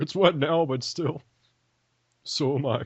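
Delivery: talking horse voice. Voicing a horse character in an improvised bit, Mr. Ed horse voice. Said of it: "Why do you sound like Mr. Ed?".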